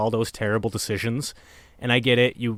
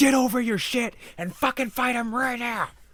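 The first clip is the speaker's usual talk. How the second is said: very high, raging mock scream; 13 semitones higher than usual. Retelling how Goku screams at Gohan to fight: imitating Goku screaming. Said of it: "literally screaming like an abusive fucking father".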